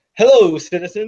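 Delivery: put-on deep, old-time 1950s all-American voice. Imitating how an actor talks playing an American spy: Henry Cavill deep 1950s Americana voice. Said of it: "deep nineteen fifties, like, ... Americana voice".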